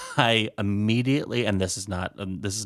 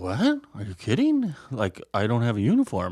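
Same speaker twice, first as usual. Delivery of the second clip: scared, terrified, incredulous, swooping disbelief. Retelling being asked to do a show tonight: retelling own terrified reply. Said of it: "I was terrified".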